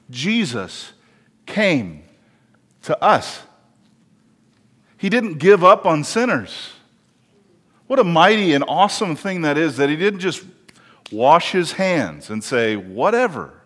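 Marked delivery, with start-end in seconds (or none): 0.1-3.4 very slow, deliberate, each word drawn right out. A speaker repeats a line so listeners hear it, said slowly. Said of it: "I'll say it slowly".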